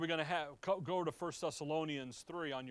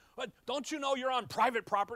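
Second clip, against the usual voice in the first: mock hollering, loud and pitched-up; 8 semitones higher, 6 dB louder than usual. Retelling watching trespassers on security cameras: imitating own yelling at the screen. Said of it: "I'm yelling at the screen".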